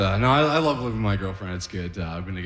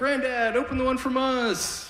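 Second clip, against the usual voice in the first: put-on very high, squeaky little-girl voice. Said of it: "His granddaughter's filming, like".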